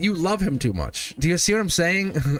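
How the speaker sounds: voice breaking. Telling someone about a sick person they care for: voice cracking. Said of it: "I see how my voice cracked".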